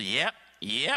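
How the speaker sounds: put-on Arkansas accent on the word "yep". Retelling a visit to an office, imitating an Arkansas accent. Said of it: "He's got this accent".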